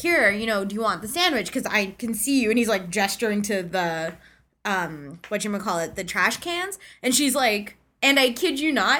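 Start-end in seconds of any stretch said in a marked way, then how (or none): none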